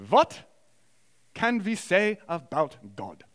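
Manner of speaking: very slow, deliberate put-on German accent. Imitating someone opening a class with one question, imitated german accent. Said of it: "in German accent, I'm going to do my best".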